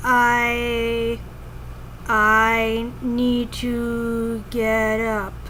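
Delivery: very slow, drawn-out, with the first I dragged long. Recalling having trouble talking, saying a line slowly. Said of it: "I'd say it like that slow".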